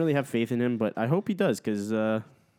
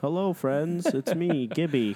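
put-on kids' TV dinosaur character voice; 4 semitones higher than usual. Host greets the friends watching at the start of the show, sounding like Barney. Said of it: "You sound like Barney".

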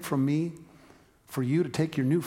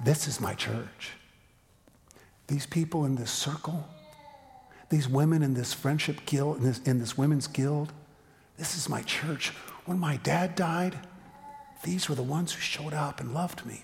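soft, lower voice, slower pace. Speaker quotes women from a women's guild, retelling in a softer, lower voice. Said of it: "they just kind of get softer and say".

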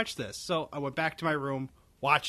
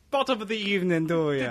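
jokey, pitched-up, fake Irish accent; 5 semitones higher, 3 dB louder than usual. Podcast host replying to a guest's greeting: put-on accent. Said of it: "I think we should stop with these accents".

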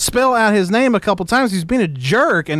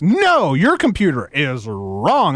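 put-on slow, swooping, sassy teenage-girl voice; 4 semitones lower than usual. Retelling a caller's repeated line, imitating a sassy woman. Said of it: "That's how he kept saying it".

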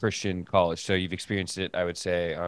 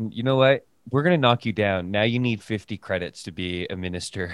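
ordinary talk

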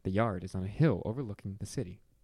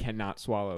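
normal talking voice

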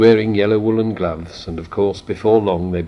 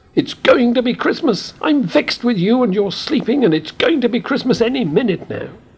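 very high-pitched, furious, shrill angry yell. Reading a story aloud, a character stamps downstairs: angry shout. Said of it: "shouted in an angry voice".

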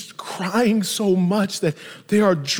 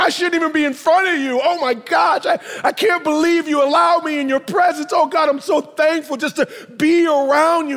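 overwhelmed, crying, tearful and weeping outpouring; 7 semitones higher, 4 dB louder than usual. Retelling a woman at Jesus' feet thanking him: imitating a crying woman. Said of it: "she's crying".

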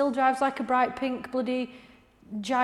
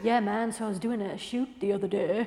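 put-on Northeast English and American accent, lower pitch; 3 semitones lower than usual. Mocking an actor's accent, a mix of northeast phrases and L A: Charlie Hunnam's mixed accent. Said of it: "it's a shit accent".

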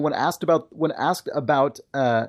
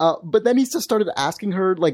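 plain

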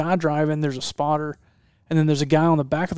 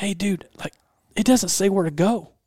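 put-on whisper, higher pitched; 4 semitones higher than usual. Retelling what the driver whispered to him while approaching an intersection, imitating someone whispering. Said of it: "he whispers to me".

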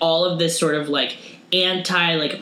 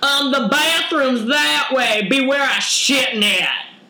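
put-on West Virginia accent, higher pitch; 8 semitones higher than usual. Imitating West Virginia locals asked about water, West Virginia accent impression. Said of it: "That's my impression of everyone in West Virginia".

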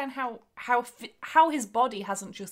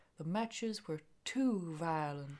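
low, very soft, hushed, gentle, scary murmur; 4 semitones lower, 9 dB quieter than usual. Showing how a soft-spoken wrestler sounds: scary, gentle Terry Funk voice. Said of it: "he sounds a bit like this".

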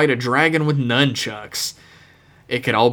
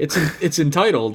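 plain

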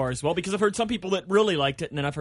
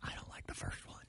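playful, joking, breathy, hushed confidential whisper; 20 dB quieter than usual. Chatting with two others about a holiday film: pretend whisper. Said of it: "I have to whisper when I say this".

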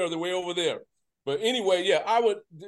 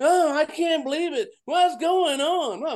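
mock panicking at a slower pace; 10 semitones higher, 3 dB louder than usual. Teasing Bill about texting from Sunday's game, imitating Bill panicking. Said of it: "he's panicking the whole time".

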